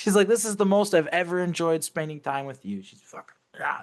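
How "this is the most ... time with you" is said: mock half-shouted, held-back mild half-yell. Retelling how she stabbed him while insulting him: imitating someone yelling. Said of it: "she's yelling this shit at me".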